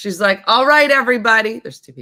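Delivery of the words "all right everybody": higher, louder, imitated loud announcing voice. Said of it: "she does not walk in quiet".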